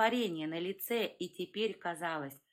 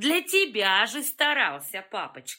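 very loud, vile, nasty laughter through the words; 8 dB louder than usual. Groznov answers his father: with nasty laughter. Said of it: "мерзким смехом ответил Грознов".

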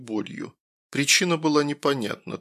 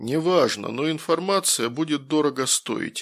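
plain

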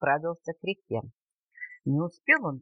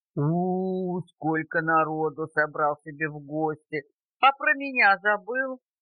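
ordinary delivery

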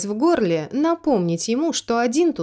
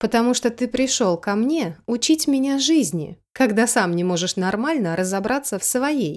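plain reading voice

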